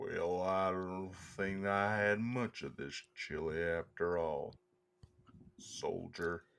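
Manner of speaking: very quiet, very slow, level cowboy monotone. Joking that cowboys talk quietly, speaker does a John Wayne impression. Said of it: "good John Wayne".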